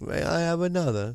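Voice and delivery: slight British accent. Playing along after a co-host says they'll do a little british, in a british accent. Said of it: "so we'll do a little British then".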